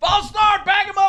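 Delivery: imitated crazy yelling. Retelling what someone yelled from the sideline during a goal-line period, retelling a sideline yell. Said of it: "he's yelling from the sideline".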